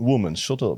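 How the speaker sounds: put-on Eastern European accent. Imitating how he tells a woman to shut up, eastern european accent. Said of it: "because of the accent".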